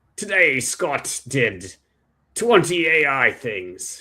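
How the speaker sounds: slow, fake, put-on British accent. Voicing an imagined AI report tool: faux British accent. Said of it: "a kind of a faux British accent".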